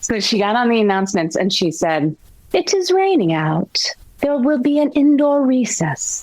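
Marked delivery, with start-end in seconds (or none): 2.5-6.2 terrible put-on English accent, high and swooping. Speaker quoting a woman's school announcement, in a terrible English accent. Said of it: "that's a terrible English accent".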